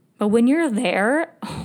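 cracked voice, breaking with emotion. Speaker describing a cabin visit, voice cracking. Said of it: "my voice is cracking".

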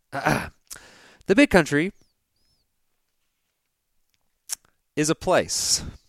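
drawn out very slowly, silence after country. Retelling a line where they went silent: long pause after 'country'. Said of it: "So just go with the pause. Go with the pause here".

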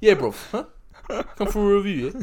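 failed put-on British accent, very loud, very high. Podcast host repeating a request for listener reviews, bad British accent. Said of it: "Can't do British".

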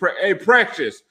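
acted, half-hearted screaming with a stumbled start. Acting out cheering on a player while watching him: mock screaming. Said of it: "I'm screaming".

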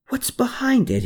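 eager, thrilled, very high voice. Narrator reads Hermann asking about the old arched door, excited question. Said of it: "he excitedly asked".

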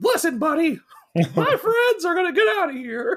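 very high, squeaky cartoon voice. Retelling what Wynd says in the book, in a Mickey Mouse voice. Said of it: "You do such a great Mickey Mouse voice".

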